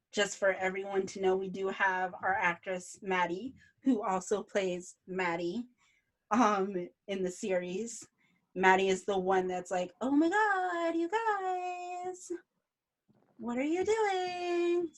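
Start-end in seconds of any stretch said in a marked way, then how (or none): 10.0-14.8 very high, slow exclamation, with "guys" stretched out. Showing the chat how the actress Maddie talks in the series: imitating Maddie. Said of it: "that's my best ... impression of you".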